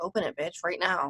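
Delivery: mock-entitled, demanding tone, low, under the breath. Retelling what a woman said while kept waiting at a gate, put-on Karen tone. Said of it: "You turn into a Karen".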